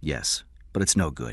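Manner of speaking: plain reading voice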